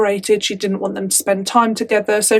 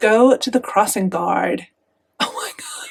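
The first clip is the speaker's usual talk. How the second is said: poor fake American accent, swooping. Trying out accents, the speaker does a bad American accent. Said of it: "I don't think anyone in America sounds like that".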